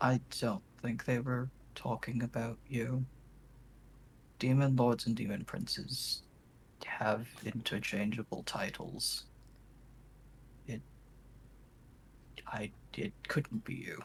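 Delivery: very quiet, hushed, reassuring murmur, close in. Player voicing Nicole, arm around Kothar, speaking to him very quietly. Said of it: "just very quietly say".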